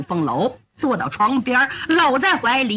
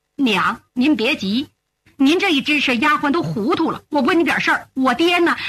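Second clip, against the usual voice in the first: ordinary delivery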